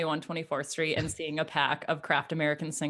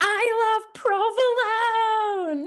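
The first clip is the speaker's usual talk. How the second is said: mock, very high-pitched, shrill, shrieking scream; 4 dB louder than usual. Retelling how the other speaker screamed at the bar: imitating someone screaming. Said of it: "you started jumping up and down and screaming, yelling".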